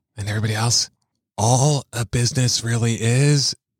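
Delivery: whispering. Telling the audience a secret while the co-host listens, whispering. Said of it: "You're still whispering".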